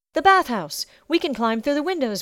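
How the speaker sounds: urgent cry, high-pitched and loud. As blows sound on the door, a girl cries out urgently. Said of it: "Bella cried".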